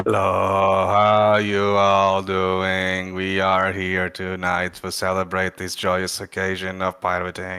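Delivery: acted apathetic, flat, unenthusiastic delivery. Greeting the others on a stream: mock apathetic, flat delivery. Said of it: "Apathetic [name]".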